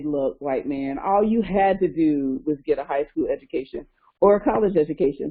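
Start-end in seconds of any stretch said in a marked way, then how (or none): none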